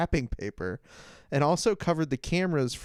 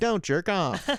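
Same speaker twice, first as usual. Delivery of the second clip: put-on robotic talking; 4 semitones higher than usual. Acting out a robot saying a line: robot voice. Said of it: "Just a robot being like".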